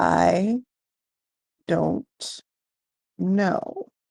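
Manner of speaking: very slow, deliberate, unhurried, even measured tone. Voicing a captured man answering an interrogator: slow and measured tone. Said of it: "in a very slow and measured tone".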